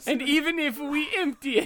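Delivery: high, laughing, hammed-up mock Italian accent.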